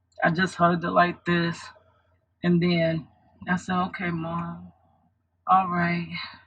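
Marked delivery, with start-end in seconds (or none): 3.9-6.1 soft, drowsy, half-asleep voice. Retelling hugging her mom while half asleep, imitating her sleepy self. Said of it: "I was so sleepy".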